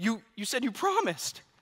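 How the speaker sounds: play-acted, slow whimpering through tears. Father retells his daughter crying over a forgotten cake pop, imitating Sailor whimpering through tears. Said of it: "you just hear Sailor like whimpering".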